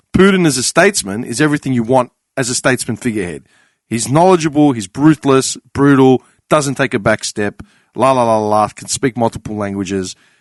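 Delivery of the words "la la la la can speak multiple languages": normal talking voice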